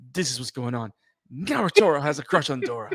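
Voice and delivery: put-on serious voice. Retelling how Kusanagi says it: imitating Kusanagi's seriousness. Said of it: "this seriousness".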